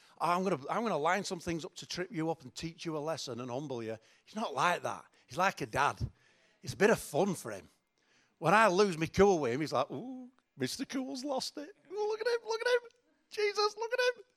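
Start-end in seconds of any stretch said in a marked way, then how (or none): 9.9-14.2 very high, rising, ribbing teasing voice. Speaker mimics someone who teases them when they lose their cool, high put-on teasing voice. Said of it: "Why's my voice this high".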